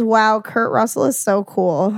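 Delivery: normal talking voice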